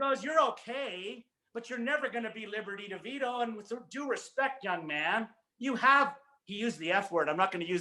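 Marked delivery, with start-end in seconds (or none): 0.2-6.1 put-on plainly spoken New York accent. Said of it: "he said this in his New York accent".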